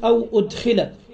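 ordinary talk

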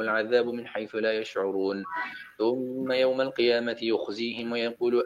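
ordinary talk, nothing marked

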